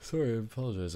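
words stretched by a yawn. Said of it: "I'm yawning".

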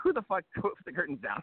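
all-out, high, shrill scream. Telling a boat-trip story about a woman stuck in the curtains: retelling a scream. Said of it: "she's screaming".

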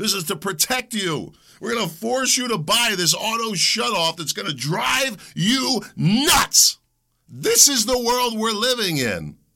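riled-up, worked-up griping, pitched high. A speaker ranting about rules forced on car buyers, worked up. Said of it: "I don't know why I'm so worked up".

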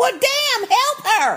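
high-pitched yelling.

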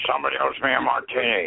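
rough, gravelly voice. Answering a request for his best impression: Rip Torn impression. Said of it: "I can do Rip Torn".

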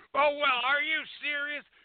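shrill screaming at full tilt, outburst. Retelling a street run-in, imitating a woman screaming. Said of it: "She's screaming at me out the fucking window".

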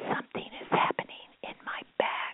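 soft, breathy whisper under the breath. Retelling a girl's answer during a church ceremony: imitating someone whispering. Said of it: "And she whispered back".

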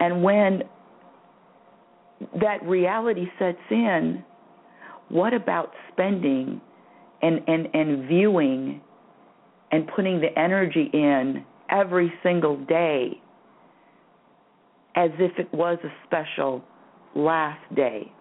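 choked-up voice catching with emotion. Addressing the audience, getting all choked up. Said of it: "I'm getting all choked up now".

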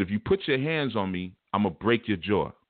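put-on threatening tone. Retelling a threat made in a courtroom, just like that. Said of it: "I said it just like that".

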